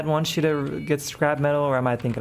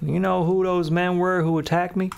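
put-on southern US accent; 3 semitones higher than usual. Streamer voicing a game character in a southern accent. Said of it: "he does have a southern accent".

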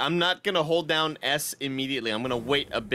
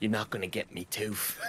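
little zombie, low, soft, with put-on accent; 5 semitones lower, 7 dB quieter than usual. Acting out a small game zombie taunting the player, in a zombie voice with an accent. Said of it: "Why does he have that accent?".

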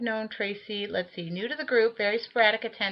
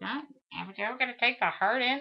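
imitated nagging, griping old-woman voice; 3 semitones higher, 3 dB quieter than usual. Quoting the speaker's dad, making him sound like a nagging old woman. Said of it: "make him sound like an 85-year-old woman bitching".

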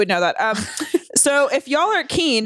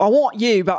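failed put-on Australian accent, slower. Speaker acts out a guy hitting on someone, failed australian accent attempt. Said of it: "that's not the accent".

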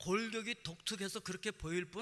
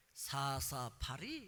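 slow, drawn-out, teasing schoolkid-style mocking taunt. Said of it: "그러면서 저를 놀리는 거예요".

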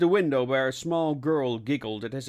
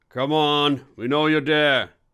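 firm, stern, raised voice; 6 dB louder than usual. Narrator voicing Alvaro calling to someone hiding near the staircase, stern. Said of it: "said Alvaro sternly".

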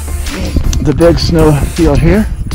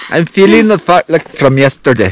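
Scottish-sounding accent. Repeating the line after a remark on the accent: Scottish-sounding accent. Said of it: "That is so, like, Scottish".

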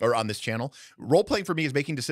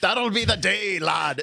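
bad fake Scottish accent, very high, loud, drawn out; 9 semitones higher, 5 dB louder than usual. Showing how people talk when role-playing: bad fake Scottish accent. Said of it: "talking like this".

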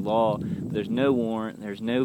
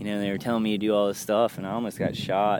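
ordinary talk, nothing marked

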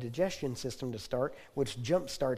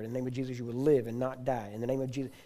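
normal talking voice

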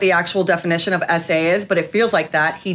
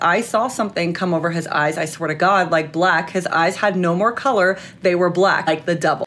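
normal talking voice

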